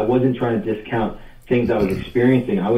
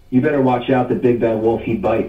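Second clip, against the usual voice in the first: plain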